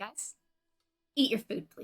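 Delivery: hushed, breathy, whispered motherly voice. The speaker tells giddy crew members to eat their food, in a mom voice. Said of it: "I'm gonna use my mom voice".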